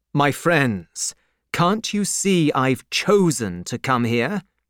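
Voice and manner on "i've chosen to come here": ordinary delivery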